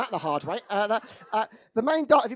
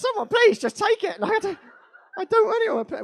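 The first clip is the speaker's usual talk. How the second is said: mock crying, tearful voice, very high pitch; 10 semitones higher than usual. Retelling offering it out to people: imitating own past crying plea. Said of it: "why are you crying?".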